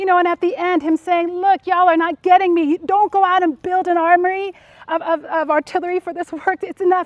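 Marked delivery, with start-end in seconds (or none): 1.3-7.1 tense, fed-up, exasperated voice. Speaker retells what Jesus said at the end, acting out exasperated Jesus. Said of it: "you can just feel Jesus' tension".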